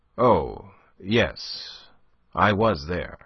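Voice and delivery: very drawn-out, strained, forced offhand tone. A man, after crying out, answers her question; trying to sound casual. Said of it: "as commonplace as he could".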